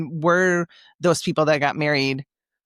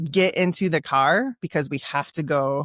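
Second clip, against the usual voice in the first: usual speaking voice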